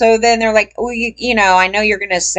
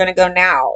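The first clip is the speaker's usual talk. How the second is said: put-on angry voice, lower; 4 semitones lower than usual. Retelling what the guy said near the end of the night: imitating someone mad. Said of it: "all mad".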